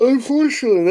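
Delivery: high-pitched yell. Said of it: "I don't know why I'm yelling right now".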